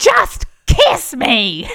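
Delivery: very loud, high, forceful, aggressive yell. Retelling a night out, imitating own aggressive yell at a man. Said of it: "I just yelled".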